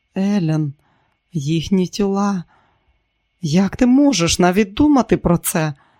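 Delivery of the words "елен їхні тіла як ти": usual speaking voice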